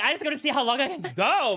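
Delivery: high-pitched, self-hyping voice full of bravado. Retelling a girl's words during an egg-balancing trick: imitating someone talking herself up. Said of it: "talking herself up like this is so big".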